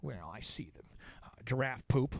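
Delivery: deliberately awful turtle creature voice, low and soft. Imagining what a turtle would say when asked what it sees, bad turtle impression. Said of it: "this is the worst turtle impression".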